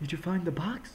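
plain, normal female character voice. Playing a game, voicing Sissi without remembering her real voice: Sissi voice. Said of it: "I'm giving her this voice".

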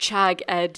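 ordinary delivery, nothing marked

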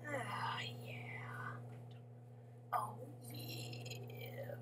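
really smooth, soft, hushed whisper.

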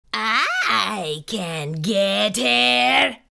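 rough, creaky, rasping hiss. Reading a story, the monster Vladimir answers the narrator about Emma, hissing. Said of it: "he hissed".

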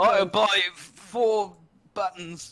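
put-on Cockney accent. Joking around, announcing a purchase in a put-on cockney accent. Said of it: "I just did a Cockney accent".

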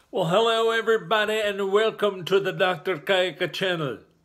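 Indian English accent. Opening a channel video, the host's greeting comes out in an accidental Indian-sounding accent. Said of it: "Why do I sound like I'm an Indian?".

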